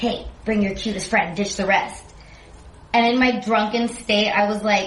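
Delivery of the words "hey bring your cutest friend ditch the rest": quiet, hushed, confidential stage whisper. Retelling what a guy in the front said: retelling a half-whisper. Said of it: "whispered to me".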